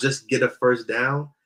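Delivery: normal talking voice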